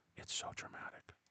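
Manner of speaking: intimate whisper right on the mic. Signing off the video to viewers, whispering close to the microphone. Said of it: "I like to whisper very close to the microphone".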